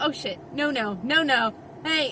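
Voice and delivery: ordinary talk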